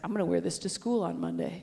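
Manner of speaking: normal talking voice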